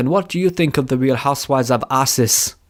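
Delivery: heavy, laid-on put-on South African accent. Retelling a radio host's interview question, imitating thick South African accent. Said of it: "had a really thick South African accent".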